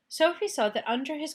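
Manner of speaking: plain reading voice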